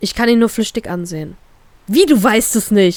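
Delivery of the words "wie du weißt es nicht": stunned, drawn-out shout of sheer disbelief. Reading a story aloud, the brother reacts to an answer: stunned shout. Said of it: "schreit er mich fassungslos an".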